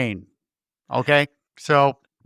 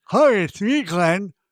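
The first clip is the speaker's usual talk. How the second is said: mock gritted-teeth voice, higher pitch; 5 semitones higher than usual. Watching something with a friend, the speaker quotes Terry, imitating him through clenched teeth. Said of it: "That's what he says with his clenched teeth".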